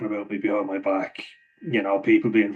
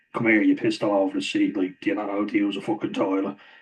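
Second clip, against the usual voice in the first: normal talking voice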